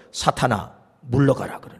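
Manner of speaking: low, soft, stern voice.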